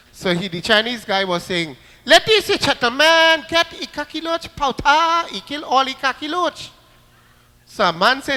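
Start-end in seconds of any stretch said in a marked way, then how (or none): 2.1-6.7 put-on Trinidad accent. Telling a story, act out the Chinese man selling insecticide in a very funny Trinidad accent. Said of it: "they talk in a very funny Trinidad accent".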